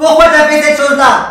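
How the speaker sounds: angry, high, loud, scolding shout.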